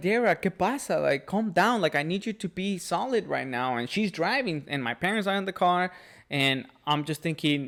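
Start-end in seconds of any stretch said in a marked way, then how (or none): 0.0-3.8 urgent, acted-out yelling. Retelling telling a crying driver to keep driving: imitating own yelling. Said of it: "so you were yelling".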